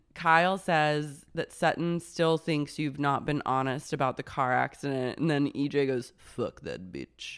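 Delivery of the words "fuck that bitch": really low, breathy whisper, different persona. Speaker retells EJ's reply to Kyle, imitating EJ's really low voice. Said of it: "Her voice got really low".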